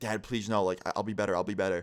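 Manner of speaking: put-on pleading, begging voice. Retelling a friend begging his dad: imitating a friend begging. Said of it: "I hear my friend begging".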